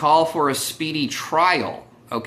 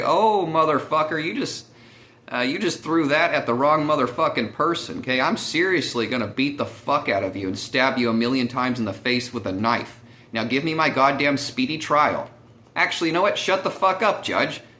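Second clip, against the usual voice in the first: ordinary delivery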